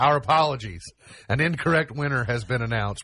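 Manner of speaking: usual speaking voice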